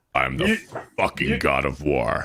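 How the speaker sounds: put-on gruff warrior voice. Doing a voice after others ask to hear Kratos: Kratos voice.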